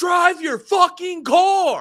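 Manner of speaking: very high, slow, drawn-out scream. Retelling what gets yelled at timid drivers: imitating yelling at drivers. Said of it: "my favorite one to do is I always love to go".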